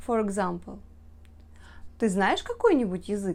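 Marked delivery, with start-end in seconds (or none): 2.0-3.4 rising, question-like intonation across the whole sentence. Russian example, turning a sentence into a question by intonation: question intonation on the sentence. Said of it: "We only add a question mark and the interrogative intonation".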